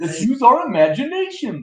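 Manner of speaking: put-on kids' TV dinosaur voice. Speaker tries cartoon voices and slips again into Barney the dinosaur voice. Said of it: "Now I'm doing it again".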